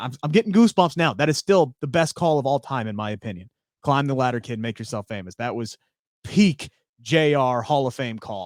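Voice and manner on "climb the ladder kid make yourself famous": ordinary delivery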